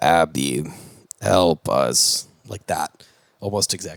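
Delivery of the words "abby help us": low, robotic electronic talking-toy voice. Retelling a movie scene where the toy calls to Abby, Speak and Spell voice. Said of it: "And then the Speak and Spell goes".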